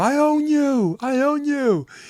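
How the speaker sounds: shrill, very high, drawn-out, stretched-out shriek. Telling a blacktop story, acting out a player screaming after a block: retelling a scream. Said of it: "screams at him".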